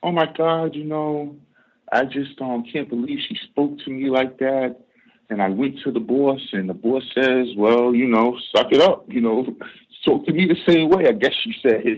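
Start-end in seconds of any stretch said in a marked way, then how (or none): 0.0-4.8 acted-out whiny, put-upon moan of grievance. Retelling the French lady's complaint to her boss after being yelled at, imitating whining. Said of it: "the French lady comes whining".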